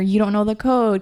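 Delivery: normal talking voice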